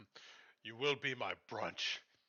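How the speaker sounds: somewhat angry, menacing, acted character voice. Playing a character who is mad that they cannot kill the creature: mad in-character threat. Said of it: "I'm gonna get kinda mad that".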